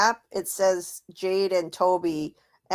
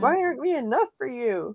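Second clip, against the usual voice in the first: high, squeaky put-on voice; 7 semitones higher than usual. Retelling what she says to the grieving parents, imitating a high, squeaky voice. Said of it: "her voice gets really high and squeaky there".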